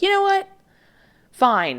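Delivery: acted, grudging sarcastic tone, very high and swooping. Acting out someone making an effort to be more open, mock sarcastic and grudging. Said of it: "it's a bit of a sarcastic tone to it. It's like".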